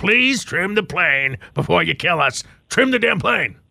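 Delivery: weathered, cracked voice. Voicing fear as a co-pilot in a pilot's ear, cracked, weathered voice. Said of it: "cracked, weathered voice in your ear saying".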